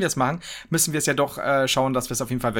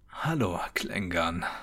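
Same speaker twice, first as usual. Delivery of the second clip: radio announcer voice, much lower and quieter; 7 semitones lower, 6 dB quieter than usual. Host opens the first podcast episode in his radio voice. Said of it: "Das ist meine Radiostimme".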